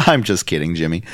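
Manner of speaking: plain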